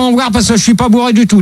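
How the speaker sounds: fast, hurried, rushed, defensive delivery.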